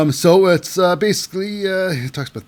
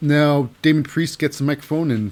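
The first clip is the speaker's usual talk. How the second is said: ordinary delivery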